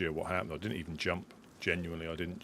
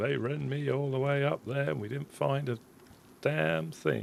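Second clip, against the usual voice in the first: put-on bad croaky, creaky old man voice, raised pitch; 9 semitones higher, 5 dB louder than usual. Speaker slips into old man mode partway through a story, old man voice. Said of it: "Jed going into old man mode".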